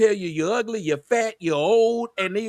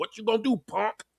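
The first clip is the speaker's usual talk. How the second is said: mock challenging tone, quieter; 5 dB quieter than usual. Describing how some women talk back: imitating a defiant taunt. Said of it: "They will sit up there and tell you".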